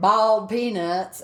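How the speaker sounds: put-on spoken in a Southern US accent. Retelling what Dan said some minutes later: Dan's southern accent. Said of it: "when Dan says in a southern accent".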